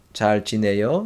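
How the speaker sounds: rising pitch on 지내요, rise at the end on 요. Korean greeting lesson, asking how someone is, rising pitch on 지내요. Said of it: "So like intonation go up".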